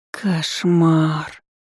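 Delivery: groaning. Reacting to what she has just heard, the narrator groans. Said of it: "простонала я".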